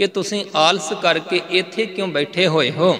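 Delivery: ordinary delivery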